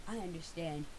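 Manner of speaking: calm, deep, soft, all-knowing godlike voice. Imitating people who say they understand, in a mock-knowing deep calm voice. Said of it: "They say it knowingly, with a deep, calm voice, like they're channeling God".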